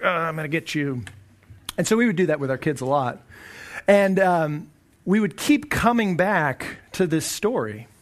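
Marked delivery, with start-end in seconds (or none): 0.0-1.0 put-on giant voice. Showing how they read the Bible story to their kids: Goliath voice. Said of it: "kind of talk in Goliath's voice".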